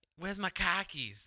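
put-on Boston accent, loud and high. Answering a remark about an accent by trying it out, put-on accent. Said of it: "that's the only accent where if you're trying to look for your car keys".

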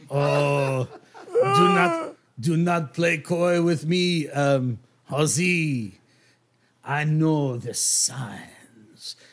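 very slow, swooping, lilting voice, drawn-out Oh. Voicing the NPC as he raises an eyebrow at a player: voicing Spoon Noir. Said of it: "he says".

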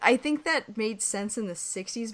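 normal talking voice

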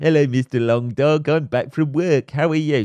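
scornful, mocking, sneery woman's voice. A speaker mocks a woman greeting her dog after work, mocking imitation of her. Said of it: "just looks at her every time".

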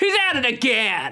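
irate held-in outcry, angry, high-pitched. Calling a warning to a Martian friend in a game scene: angry shout. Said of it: "you shout angrily".

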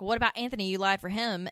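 ordinary delivery

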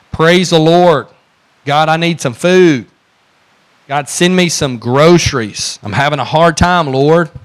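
loud, high-pitched shouting. Telling a story of a woman shouting from her porch, retelling a shout. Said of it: "and she shouted".

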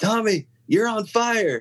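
put-on frantic, alarmed, very high-pitched voice. Retelling a music director's warning during a show: imitating someone frantic. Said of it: "really kind of frantic".

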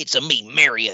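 high, loud, angry cowboy voice, belted out. Joining a joke about a wrestler looking like Mario: Mario voice. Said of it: "like a angry Cowboy Mario".

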